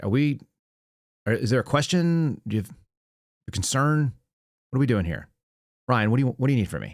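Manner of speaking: deadpan, completely straight, no joking. Retelling own reply when questioned about a fitness test ranking: retelling own deadpan reply. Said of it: "just deadpanned him".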